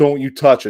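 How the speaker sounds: plain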